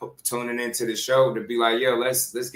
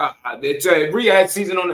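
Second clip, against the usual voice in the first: halting, stammering start, raised and pitched up; 6 semitones higher, 6 dB louder than usual. Retelling how someone answered on the Boxing Voice: imitating someone stuttering. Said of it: "he started stuttering".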